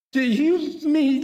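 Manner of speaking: very high-pitched, halting, stuttering, stammering delivery. A narrator voices the bug answering the king and the math magician, stammering. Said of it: "stammered the bug".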